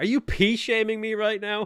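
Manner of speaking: shrill, very high, loud outcry at top volume. Retelling a remark to a girl outside a restaurant: imitating own loudest shout. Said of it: "in the loudest voice I could possibly say".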